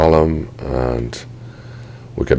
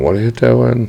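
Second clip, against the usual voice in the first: high-pitched, mild mock scream. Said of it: "screaming at me going".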